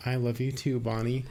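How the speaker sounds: play-acted flat deadpan, no feeling in it. Retelling a film scene where the mom answers bonnie: imitating a deadpan line.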